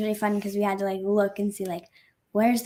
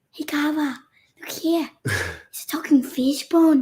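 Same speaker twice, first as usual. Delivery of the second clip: put-on, loud, swooping, drawn-out Scottish accent; 6 semitones higher, 5 dB louder than usual. Quoting a favorite movie line: put-on Scottish accent. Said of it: "trying to do your best Scottish accent".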